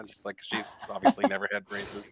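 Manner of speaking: ordinary talk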